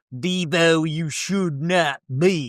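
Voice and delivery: put-on hillbilly voice. Suggesting someone deliver a line in a hillbilly voice. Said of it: "somebody with a hillbilly voice, like as if they're in Deliverance".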